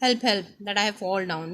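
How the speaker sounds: usual speaking voice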